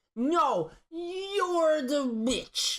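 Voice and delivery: mock pissy voice, pitched way up and dragged out. Acting out getting really pissy while being filmed: acting out getting pissy. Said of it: "That's a really good impression of you".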